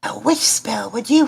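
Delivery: high-pitched stage half-whisper. Voicing a character who quietly asks about a witch spell: half-whispering. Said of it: "he whispers".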